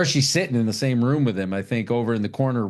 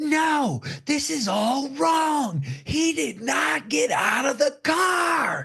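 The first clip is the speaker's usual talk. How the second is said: very high, shrieking, outraged scream. Recounting what she did at the movie theater, retelling her scream. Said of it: "And I stood up and screamed".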